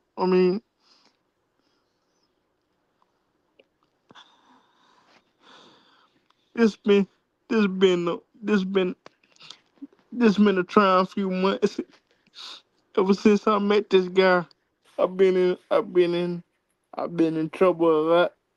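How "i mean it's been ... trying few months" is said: about to cry, choked voice. Saying goodbye to a guy he'll miss, about to get emotional. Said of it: "I'm about to get emotional".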